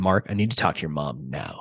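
genuinely stern, low and hushed insistence. Speaker retells a man demanding to talk to his mom, imitating a stern voice. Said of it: "he got real stern with me".

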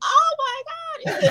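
very high, tearful crying through the words. Retelling the moment the first call came: retelling own crying. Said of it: "I was, like, crying".

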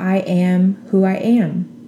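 ordinary delivery

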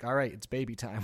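normal talking voice

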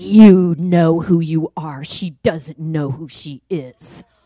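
deep demonic voice. Retelling what a man said to the speaker: demonic voice. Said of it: "in the most demonic voice".

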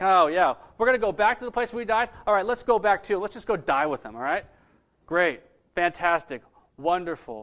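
heavily sarcastic, doubting tone throughout. Retelling the story of Thomas speaking to the disciples, acting out Thomas, sarcastic. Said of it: "Like he's sarcastic".

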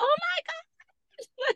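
mock, very high, excited shrieking squeal. Recounting the moment she saw him eat spaghetti with his fork; retelling a scream. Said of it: "I was like screams like".

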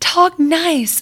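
mean, hateful, high-pitched little yell. Retelling how she yelled at her whining little brothers as a girl, retelling a mean yell. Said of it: "I would like yell talk nice to them in the meanest voice".

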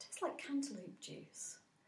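slow, smug, gleeful whisper.

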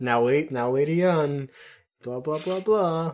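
slow, mock patronizing, talking-down tone. Retelling how Treize talks to Lady Une: patronizing Treize voice. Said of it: "such a patronizing voice when he's like".

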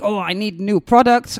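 ordinary talk, nothing marked

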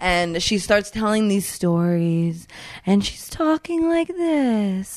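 imitated slow, hypnotic trance-like talking. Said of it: "That's not how I was talking".

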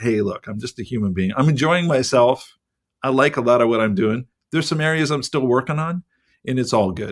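ordinary delivery

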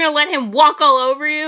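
acted yelling. Recounting a woman who bullied a man, retelling her yelling at him. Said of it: "She's like yelling at him".

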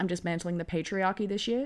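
ordinary talk

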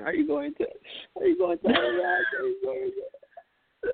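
crying, very high, tearful and pleading. Retelling mom's worried reply on the phone: imitating mom crying. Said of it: "She starts crying".

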